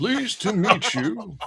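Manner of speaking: put-on old scholar voice. Voicing an old scholar greeting the visitors: old Corvus voice. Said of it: "I'm trying to do old Corvus voice".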